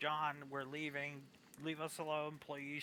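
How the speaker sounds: earnest, begging pleading tone. Retelling how Sandra asked him to leave them alone: imitating Sandra begging. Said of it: "begging him".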